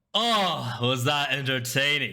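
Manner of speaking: words spoken through laughter. A game master voices a patron speaking inside Biggin's head; laughing while talking. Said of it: "a voice laughing in the back of your head".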